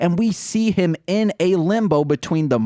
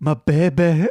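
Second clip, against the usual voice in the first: put-on Scottish accent. Doing a character from a television show: Scottish character voice from Ugly Betty. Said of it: "becoming this Scottish person from Ugly Betty".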